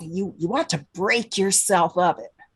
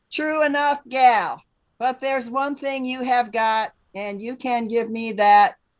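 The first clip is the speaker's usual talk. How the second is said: heartless, cruel landlord voice, higher pitch; 6 semitones higher than usual. The landlord answers a woman who cannot pay the rent, cruel, heartless landlord. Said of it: "Ah, that must be [name], my cruel, heartless landlord. / Oh, [name], / heartless landlord".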